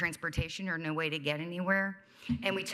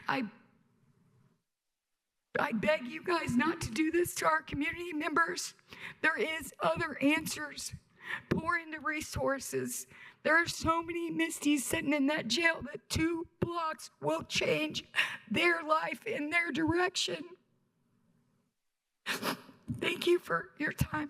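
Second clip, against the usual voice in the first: speaking through tears; 11 semitones higher than usual. A speaker finishing public comments to the listeners, crying while speaking. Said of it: "Sorry for crying".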